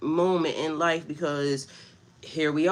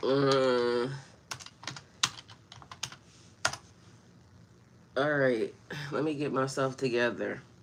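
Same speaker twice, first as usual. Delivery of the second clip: crying while talking, lower and quieter; 4 semitones lower, 6 dB quieter than usual. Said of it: "I don't know why I'm crying right now".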